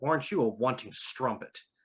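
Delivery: mock bone-dry, unmoved, expressionless deadpan. Retelling a line said to a character's patron in a game: imitating a deadpan delivery. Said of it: "look at her deadpan and go".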